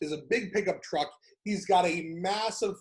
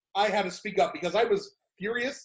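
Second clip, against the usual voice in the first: normal talking voice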